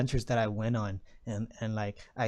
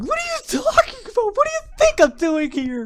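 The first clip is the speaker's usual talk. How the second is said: loud, shrill, high sobbing wail with big swoops; 11 dB louder than usual. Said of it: "starts crying".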